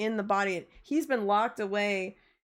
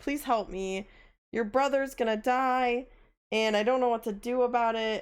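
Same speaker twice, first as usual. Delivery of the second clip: mock begging, desperate, pleading voice; 2 semitones higher than usual. Recounting a game scene, begging another character for help, mock-desperate pleading. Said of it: "my character has been very desperate".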